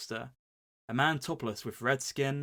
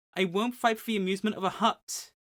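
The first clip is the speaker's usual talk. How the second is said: sassy, high, loud puppet voice; 8 semitones higher, 5 dB louder than usual. Retelling what Luke tells the Hutt, in a sassy Luke voice. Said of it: "the sassy like Pinocchio".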